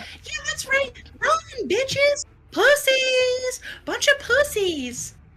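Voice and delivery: tiniest little fox voice, very high and loud. Voicing a fox in a little tower as enemies run: tiniest little fox voice. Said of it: "tiniest little fox voice you hear".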